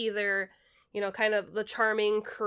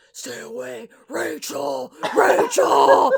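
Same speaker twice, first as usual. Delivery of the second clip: drawn-out, loud, rough delivery; 4 semitones higher, 9 dB louder than usual. Retelling a movie scene where a character tells her to stay away: Batman voice. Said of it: "that's when we get the Batman voice".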